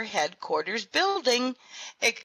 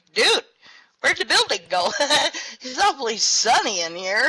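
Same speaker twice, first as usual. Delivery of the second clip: mock words breaking through hard, loud, baffled laughter; 3 semitones higher, 5 dB louder than usual. Retelling his words to the panicked guy who deleted the building, laughing hard. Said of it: "I'm laughing so hard, going".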